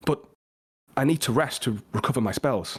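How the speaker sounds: meek, shy, slightly timid voice. Narrating voices one after another, the second voice answers the first, a little timid. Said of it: "The next voice now is a little timid".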